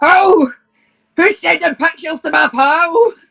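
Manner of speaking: put-on angry thick Scottish accent. On a train, retelling how someone jumped up and shouted, mock-angry scottish shout. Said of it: "in the most like Scottish accent that he could muster".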